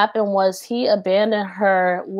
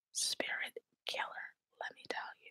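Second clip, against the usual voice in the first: speaking in a whisper, quieter. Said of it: "I just wanna whisper it".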